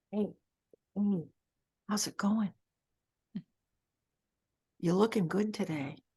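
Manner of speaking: hushed, barely-there, half-whispered windlike voice. The speaker voices what the wind says among the blowing leaves, half-whispering. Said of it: "It whispers".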